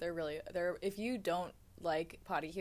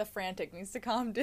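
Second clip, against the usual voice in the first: usual speaking voice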